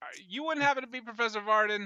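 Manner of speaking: yelling in character voice. Calling out to a woman walking away, yelling in character. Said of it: "I yell".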